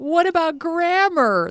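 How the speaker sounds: whiny, complaining voice, very high. Saying the talk's title question the way it should be said: whiny voice. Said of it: "you got to say it with a whine. ... That's how I say it anyway".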